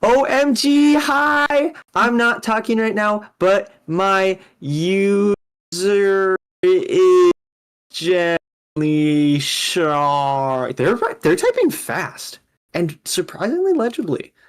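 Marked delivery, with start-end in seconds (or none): 0.0-10.8 very slow, drawn-out, word-by-word delivery. Reading out chat messages from a spouse on stream, imitating Evie. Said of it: "Let me do an impression for you because I'm married to them".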